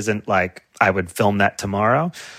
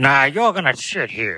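put-on old film style speech; 4 semitones higher than usual. Talking about lost accents, mimicking how people talked in old movies: old-movie accent. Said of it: "when you watch old movies, people are like".

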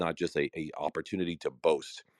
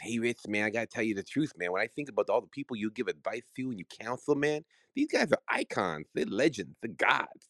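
high, easygoing boxer voice, stress leaning on "man"; 5 semitones higher than usual. Retelling what a client told him about his clients: Mike Tyson impression. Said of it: "my best impersonation of Mike".

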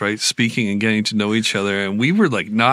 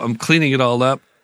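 ordinary talk, nothing marked

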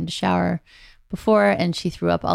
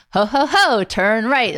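belted out, slow, big and loud; 5 semitones higher, 5 dB louder than usual. Recounting a funny voice they played to avoid a fight, in a Santa voice. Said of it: "we put on the Santa one".

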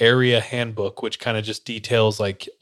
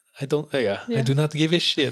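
failed, bad put-on French accent; 4 semitones higher than usual. Joking about how people in france react to visitors: bad french accent. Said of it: "how do I do French? That was not French".

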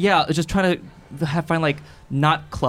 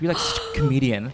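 normal talking voice

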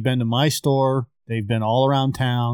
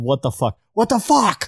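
put-on high, raised yell; 7 semitones higher than usual. Recounting shouting at a man through the car window at an intersection, retelling a yell. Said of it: "and I yelled".

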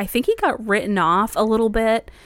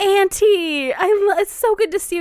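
very high, overly bright, fake cheerful tone; 12 semitones higher, 3 dB louder than usual. Retelling a character greeting his aunt in a film: imitating a big fake smile. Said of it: "big smile".

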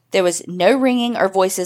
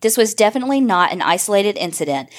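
normal talking voice

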